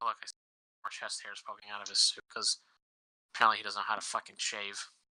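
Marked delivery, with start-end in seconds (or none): none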